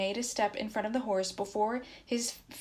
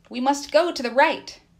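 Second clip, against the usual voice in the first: stern, severe, very loud voice; 5 semitones higher, 10 dB louder than usual. Back from searching the snow, a man takes the reins and gives the direction, stern. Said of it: "he said sternly".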